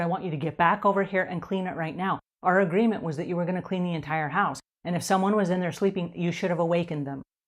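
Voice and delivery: ordinary talk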